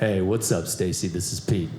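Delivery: very low, pushed-down deep macho voice. Retelling leaving a phone message, trying to sound masculine: pushed deep voice. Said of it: "the most masculine message I think I'm capable of, you know, hitting the bass notes".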